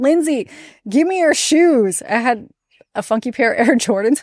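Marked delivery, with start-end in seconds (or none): 0.0-2.0 put-on high, cheeky, childlike called-out voice. Reporter recalls a kid shouting at her after an interview, retelling a kid's yell. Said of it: "this kid yells at me".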